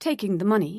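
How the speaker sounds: ordinary delivery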